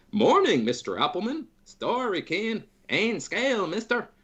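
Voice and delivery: bright, upbeat high voice.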